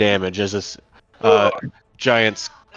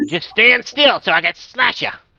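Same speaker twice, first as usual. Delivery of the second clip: squeaky little goblin voice, very high; 12 semitones higher, 4 dB louder than usual. Voicing a goblin taking its turn in the game, goblin voice. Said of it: "that was a good vo- goblin voice".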